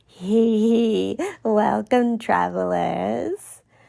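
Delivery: very slow, small, raspy creature voice. Voicing a scruffy game character greeting travelers, in a raspy little voice. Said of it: "give them a raspy little voice".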